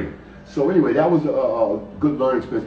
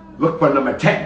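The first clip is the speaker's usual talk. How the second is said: imitated New York accent. Quoting a man who came over one day: New York accent. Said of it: "in a New York accent".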